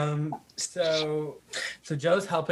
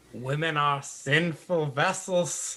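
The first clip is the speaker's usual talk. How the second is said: southern preacher voice, pulpit-style, southern accent. Reacting to a discussion about a conversation, in a southern preacher voice. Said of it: "That's my best Southern preacher voice".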